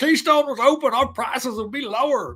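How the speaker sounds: put-on Texas accent, very high-pitched and loud. Quoting a talking point he dislikes, the speaker imitates a Texas accent. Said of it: "I'm not appropriating that accent".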